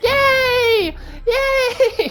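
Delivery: gleeful, giddy, very high, loud squeal.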